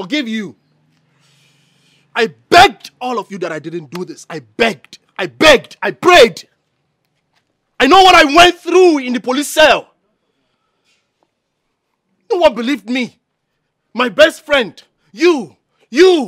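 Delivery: loud, distressed, angry, upset outburst. Confronting those who did not believe him: upset, angry outburst. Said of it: "Calm down, okay?".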